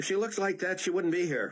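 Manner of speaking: curt, brusque bark. Reading a novel aloud, a hospital clerk answers curtly: barking. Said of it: "the woman barked".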